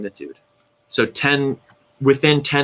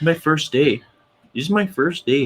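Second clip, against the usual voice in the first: jokey put-on Canadian accent, pitched up; 5 semitones higher than usual. Playing someone on their first day, canadian accent. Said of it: "that's like my Canadian accent".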